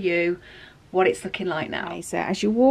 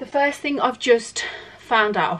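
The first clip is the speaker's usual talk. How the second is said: breathless, winded, out of breath speech; 4 semitones higher than usual. Filming a desk storage video while cooking dinner; out of breath. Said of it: "sorry, I'm out of breath".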